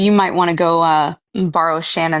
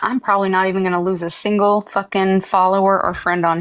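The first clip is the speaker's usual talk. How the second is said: ordinary delivery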